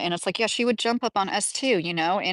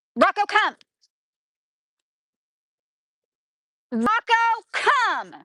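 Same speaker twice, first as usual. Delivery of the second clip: very high, firm yell, meaning business; 14 semitones higher, 4 dB louder than usual. On a live broadcast, calling Rocco to come back, yelling for Rocco. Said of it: "I have to yell at him like that".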